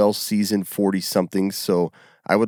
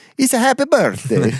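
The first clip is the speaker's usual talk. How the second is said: loud, very high-pitched put-on Italian accent; 6 dB louder than usual. Giving a joking birthday wish in another accent: italian accent. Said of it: "the Italian one".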